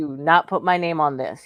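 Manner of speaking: grave, dead serious, no-joke delivery. Retelling his words after he got so serious: imitating someone serious. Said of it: "He said it like that".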